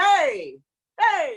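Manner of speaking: loud, high-pitched, irritated, annoyed calling out. Demonstrating the TA muscle, told to get annoyed: annoyed calling out. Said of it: "I want you to get annoyed with him".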